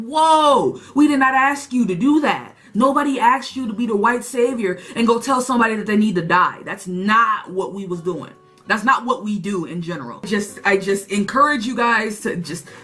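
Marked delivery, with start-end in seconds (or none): none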